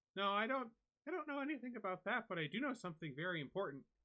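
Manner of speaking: put-on very high, lively, vivacious six-year-old girl voice. Voicing a young girl answering a player's question: vivacious six-year-old girl voice. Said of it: "vivacious six-year-old girl".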